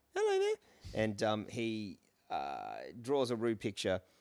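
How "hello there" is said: put-on very high, small little boy voice. Describing a show to listeners, voicing its boy lead in a little Timmy voice. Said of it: "little Timmy, as I gave you the voice before".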